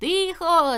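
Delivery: stern schoolmaster yell, loud and high. A narrator reads a pupil trying to silence a laughing class, yelling. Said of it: "заволав Суботик".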